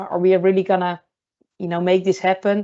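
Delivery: normal talking voice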